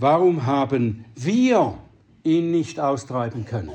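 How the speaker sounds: heavy stress making wir the most prominent word.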